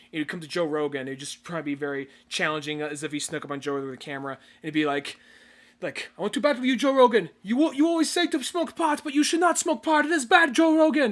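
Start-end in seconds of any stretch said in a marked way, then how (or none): 6.1-11.1 put-on shrill, very high, loud Brazilian accent. Retelling how an actor snuck up on someone with a camera, Brazilian accent impression. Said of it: "it was the accent that threw me off".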